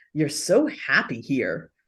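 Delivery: scornful, disdainful, low, swooping pitch. Quoting their son's remark to them: imitating disdainful tone. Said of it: "almost this kind of sound of disdain in".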